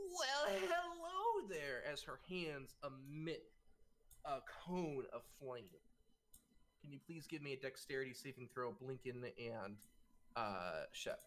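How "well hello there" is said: put-on very high, sing-song, swooping old crone voice. Voicing an old crone who appears and greets the centaur: old crone voice. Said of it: "the whole old crone appears".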